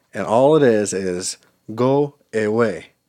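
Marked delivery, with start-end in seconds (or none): 1.8-2.9 put-on South African accent. Recalling a single line from a childhood movie: imitating it in South African accent. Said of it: "spoken in this accent and tone".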